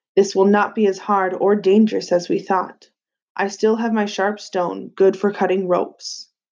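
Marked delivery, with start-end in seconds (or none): none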